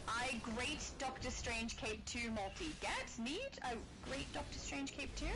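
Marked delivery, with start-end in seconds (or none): none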